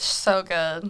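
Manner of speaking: ordinary talk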